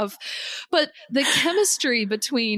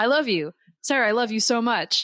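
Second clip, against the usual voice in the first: flat delivery, like reading a list. Retelling a movie death scene line: imitating Eddie Murphy's emotionless delivery. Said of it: "there's zero emotion in his voice".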